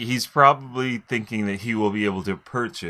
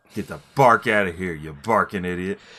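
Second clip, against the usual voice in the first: mock threatening gangster voice, lower pitch; 3 semitones lower than usual. Voicing the dog character threatening someone: gangsta voice. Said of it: "gangsta-ass gangsta dogs do".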